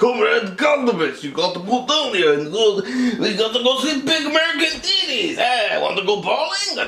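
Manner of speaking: exaggerated, thick Russian accent, very high and swooping. Contrasting a film's mild Russian accents with a heavy one: exaggerated Russian accent. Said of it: "They're really not like".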